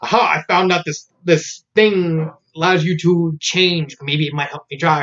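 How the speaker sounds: ordinary talk, nothing marked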